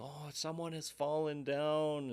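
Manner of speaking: very high, stretched-out, drawn-out yell. Retelling hearing people above shout about a fall: imitating people yelling. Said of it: "hear people yelling".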